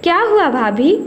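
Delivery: ordinary delivery, nothing marked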